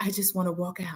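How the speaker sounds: soft half-whisper under the breath. Retelling the end of an episode, imitating someone half-whispering. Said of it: "she whispers".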